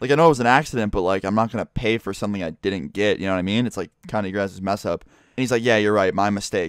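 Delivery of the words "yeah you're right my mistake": mock sarcastic tone. Retelling a pizza dispute, quoting the man who handed over the pizza, mock-sarcastic reply. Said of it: "and it was so sarcastic too".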